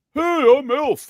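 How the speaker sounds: piped-up high, loud puppet voice. Recounting a man's hand puppet bit on camera: Elf puppet voice. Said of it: "in his elf voice".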